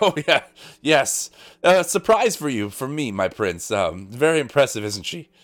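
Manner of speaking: puffing, blustery, huffing delivery. Storyteller voices Sir Alex replying to his prince, huffing and puffing. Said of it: "huffing and puffing".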